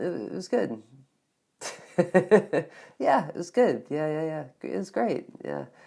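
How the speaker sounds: reluctant, unconvinced, hesitant and half-hearted, unenthusiastic delivery. Showing how someone might answer a question about dinner: hesitant, unenthusiastic. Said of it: "Not a great dinner".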